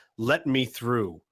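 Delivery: loud, booming robotic mechanical voice. Narrating a commotion at the back of a room, in a loud robotic voice. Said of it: "a very familiar and rather loud robotic voice say".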